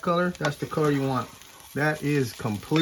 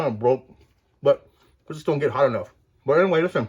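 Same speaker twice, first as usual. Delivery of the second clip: talking with mouth full; 4 dB louder than usual. Showing how to make tortillas, speaking right after taking a bite; talking with mouth full. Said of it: "Sorry, my mouth's full".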